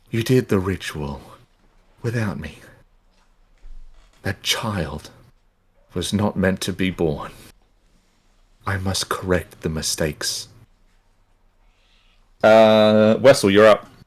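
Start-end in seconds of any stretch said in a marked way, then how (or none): 0.1-10.4 very quiet, hushed, faint ghostly female voice. Narrating a scene, voicing a voice the listeners hear: faint female voice. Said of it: "this faintly female voice".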